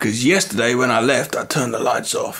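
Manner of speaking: put-on American accent.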